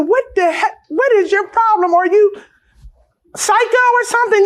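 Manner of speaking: mock high-pitched screaming yell. Retelling confronting a woman who shoved the baby stroller: retelling her own screaming. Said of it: "I'm screaming".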